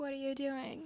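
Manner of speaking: put-on slurred mumble. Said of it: "she's, like, slurring her words".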